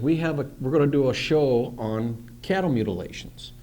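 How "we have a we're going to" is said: usual speaking voice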